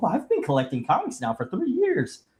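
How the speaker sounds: put-on soft sing-song little girl voice. Speaker quoting a little girl from a commercial, in a little girl voice. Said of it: "that commercial with that little girl".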